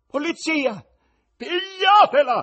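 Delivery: dreadful shriek, very high-pitched and very loud. A wife cries out during a theatre performance, with a terrible scream. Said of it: "urlò la moglie con voce così tremenda".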